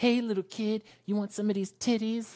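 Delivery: very high street catcall. Retelling how women on the street called out: imitating a woman on the street. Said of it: "these women on the streets being like".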